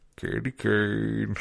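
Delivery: rough, creaky, drawn-out CB radio drawl. Imitating a guy saying his cb handle: imitating a guy's cb voice. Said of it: "you know that guy's voice. So he's like, Candy Cane. Like this".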